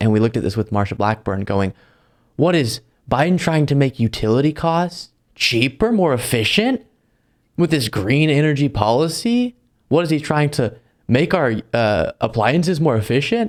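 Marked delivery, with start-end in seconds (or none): 2.4-13.5 mock-scandalized, outraged, indignant tone. Criticizing people who repeat lines to make followers outraged, imitating Marsha Blackburn's outraged tone. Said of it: "Why are you saying that in outraged tone of voice?".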